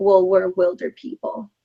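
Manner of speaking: plain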